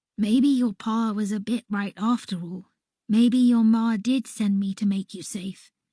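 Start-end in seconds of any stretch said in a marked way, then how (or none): none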